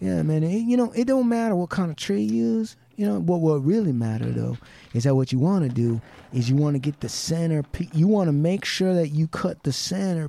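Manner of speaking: put-on Southern good-old-boy accent. Retelling how a man used to talk, in a put-on Southern accent. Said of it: "with a Southern accent".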